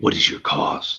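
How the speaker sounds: low, rough gravelly voice like grinding stones. Voicing the cover man when asked what it takes to get in, low gravelly voice. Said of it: "It is a low, like gravel voice".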